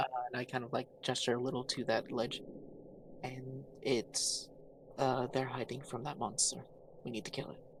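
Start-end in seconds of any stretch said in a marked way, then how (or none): 1.0-7.6 hushed whisper. Whispering to a party member about an injured person nearby: whispering in character. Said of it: "I'd like to whisper to".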